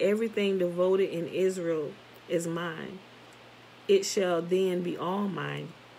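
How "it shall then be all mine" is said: plain reading voice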